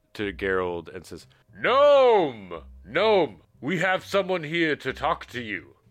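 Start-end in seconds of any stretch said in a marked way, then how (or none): 1.6-5.7 loud, high, calling-out yell. Narrating a tabletop game, the man leading the group calls to the gnome, yelling out. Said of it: "the man leading you yells out".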